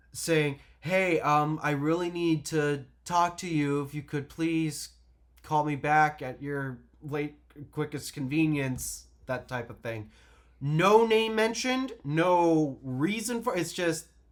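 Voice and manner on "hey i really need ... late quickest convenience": usual speaking voice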